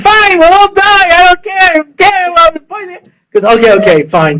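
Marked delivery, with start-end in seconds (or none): 0.0-2.3 put-on scream, much higher pitch. Speaker telling a story re-enacts screaming at her, retelling own screaming. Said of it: "I start screaming".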